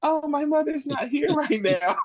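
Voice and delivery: put-on very high, tiny, babyish little baby voice. Imitating a woman answering a police call, imitating her little baby voice. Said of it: "the little baby voice".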